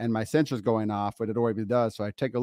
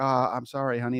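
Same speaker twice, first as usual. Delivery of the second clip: put-on tender loving whisper, slower. Retelling how she pulled away and whispered an apology: imitating a loving whisper. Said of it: "just in this like loving".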